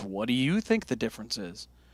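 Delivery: sarcastic, mocking delivery. Retelling a shop clerk's answer to a guitar question: imitating a sarcastic reply. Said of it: "really sarcastic about it".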